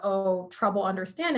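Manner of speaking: ordinary talk, nothing marked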